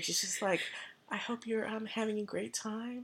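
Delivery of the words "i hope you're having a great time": very faint half-whisper, hardly there. Retelling how the girl at the calming place spoke: imitating a half-whisper. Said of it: "the girl was whispering".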